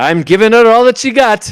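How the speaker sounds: calm, collected reply. Retelling a starship scene, Scotty answering about shields, mock-cool Scotty impression. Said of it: "He doesn't yell this one. This is just the cool and collected".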